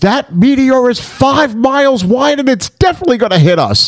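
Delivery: high, loud mock yell. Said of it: "Carl Malden starts yelling at Sean Connery and goes".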